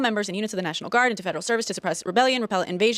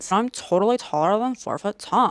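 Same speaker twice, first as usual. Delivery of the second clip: put-on sulky, pouting California accent. Showing what he figured out, a perpetual pout: Stephen Miller impression. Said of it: "I figured out what Stephen Miller sounds like".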